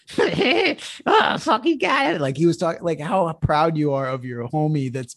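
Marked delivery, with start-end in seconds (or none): 0.1-2.2 very high, very slow, drawn-out clenched-jaw talk. Retelling a drunk heckler at an arcade: imitating talking through a wired-shut jaw. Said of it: "he had his jaw wired shut".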